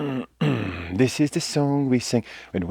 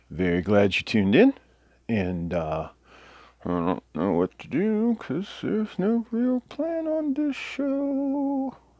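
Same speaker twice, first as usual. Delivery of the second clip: goofy, rambling, high, swooping bird-puppet voice; 7 semitones higher, 5 dB quieter than usual. A bird puppet hosting Test Tentacle greets viewers, in a goofy bird puppet voice. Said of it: "I didn't even know I could do that with a beak".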